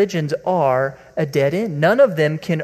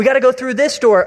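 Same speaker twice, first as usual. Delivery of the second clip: put-on fast, frantic, urgent, panicked shout; 7 semitones higher, 4 dB louder than usual. Acting out a coworker in a fire panic: acting out a panicked yell. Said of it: "you hear one guy yell".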